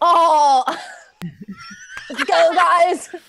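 high, swooping snowboarder dude character voice. Asking to play the snowboarder, the speaker jumps straight in: snowboarder voice. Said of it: "Can I be like the snowboarder? Like".

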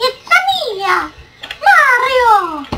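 goofy cartoon donkey voice, high-pitched and loud. Goofing around for listeners, in a silly donkey voice. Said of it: "Don't you guys love my donkey voice?".

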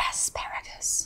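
dead-serious, hushed whisper. Retelling a man's answer to a menu question on set, imitating a whisper. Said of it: "he whispers".

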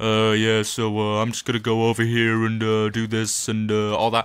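dull, flat, slow robotic monotone drone. Showing how they sound when playing games: imitating own monotone voice. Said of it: "And I go really monotone".

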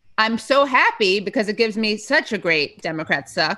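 plain

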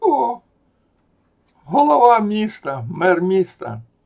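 loud, high-pitched mocking shout.

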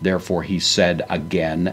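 normal talking voice

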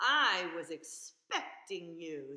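deep, low, booming voice, slow and drawn-out. Reading a picture book aloud, voicing the octopus in a deep voice. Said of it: "said the octopus in a deep voice".

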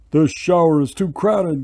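loud, fed-up, grumbling complaining tone. A boy's father, with the boy's pet moved into the bathtub, complaining. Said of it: "complained Louis's father".

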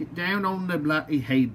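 horrible, bad put-on English accent. Speaker tries to push a helmet onto a figure's head, horrible English accent. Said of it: "That was a horrible English accent".

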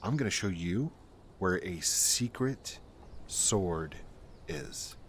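speaking very quietly. Showing a secret in a game, speaking very quietly. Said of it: "I gotta be really quiet".

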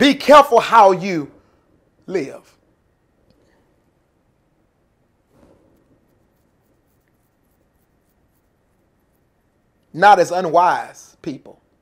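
each word very slow and deliberate. Speaker reads a Bible verse slowly so the listeners can hear it, very slow. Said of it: "I'm doing it slow".

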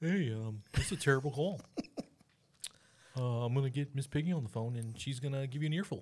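clumsy, bad put-on puppet frog voice. Imitating a football player after a bad call: Kermit voice. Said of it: "I can't do a Kermit impression".

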